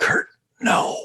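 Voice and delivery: near-whisper, soft and faint. Voicing a trapped companion calling out from inside a giant creature, almost in a whisper. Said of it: "you hear almost in a whisper".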